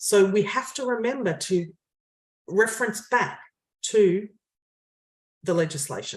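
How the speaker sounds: earnest, high-horse, passionate delivery. Speaker making a point to listeners, passionate. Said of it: "You can hear the passion in your voice".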